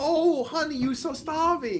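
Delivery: very high, fussing, doting, drawn-out voice. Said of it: "friends like me who come over and be like".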